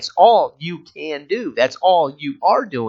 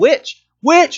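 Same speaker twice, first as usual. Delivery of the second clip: high, loud, baffled crowd yell. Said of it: "people are crowded around you going".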